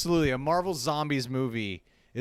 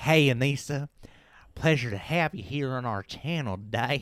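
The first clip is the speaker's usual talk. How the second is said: put-on Southern US accent throughout. Showing how her Southern accent sounds while welcoming a guest. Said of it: "My southern accent sounds a little bit more like like this".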